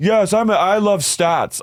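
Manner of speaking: pitched very high, spoken slowly. Retelling how Bronwyn talks, like a Mad Men woman. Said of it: "like a Mad Men woman or something".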